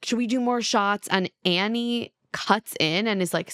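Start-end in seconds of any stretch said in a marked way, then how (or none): 0.0-1.1 fast, mild, light shout across the room. Retelling how one man yelled across a bar to another, imitating someone yelling. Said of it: "yelling at Jordan across the bar".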